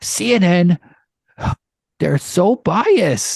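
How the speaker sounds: very slow, high, weighty, deliberate drawl. Doing an impression of Joe Rogan for the others: Joe Rogan impression. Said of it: "That's my impression of Joe Rogan".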